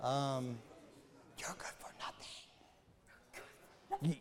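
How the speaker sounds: whispered, hushed voice. Choosing to whisper a line because saying it aloud is redundant: whispered. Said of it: "maybe I'll whisper".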